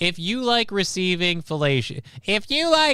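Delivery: exaggerated, full cartoon character voice. Mid-advice, the speaker slips into a SpongeBob voice. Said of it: "I'm slipping into a SpongeBob voice".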